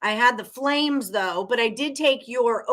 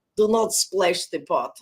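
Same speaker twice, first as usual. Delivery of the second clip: put-on Russian-accented voice, lower pitch; 5 semitones lower than usual. Answering a greeting with a Rounders line: Teddy KGB impression. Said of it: "Rounders impressions".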